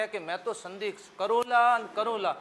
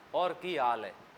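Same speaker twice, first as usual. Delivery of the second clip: quiet, soft, affectionate, gentle, friendly, easy tone; 7 semitones lower, 6 dB quieter than usual. Showing how we lovingly talk among ourselves: soft and gentle. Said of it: "अपन ऐसे कहेंगे, ... बहुत धीमे बोल देंगे".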